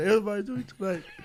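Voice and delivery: mock saddening delivery. Retelling a show bit with a dead puppet: imitating someone getting sad. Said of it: "He's getting sad".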